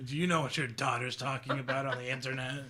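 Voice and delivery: middle-aged, very heavy smoker voice. Pretending to address the other speaker's parents, in a middle-aged two-pack-a-day smoker voice. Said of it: "doing like the middle-aged smokes 2-pack a day".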